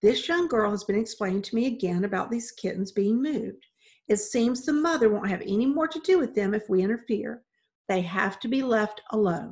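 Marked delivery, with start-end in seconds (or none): none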